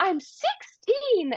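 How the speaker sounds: mock, very high, shrill yelling voice. Retelling a film scene where she yells at her dad: imitating The Little Mermaid yelling. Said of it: "she's yelling at her dad and she's like".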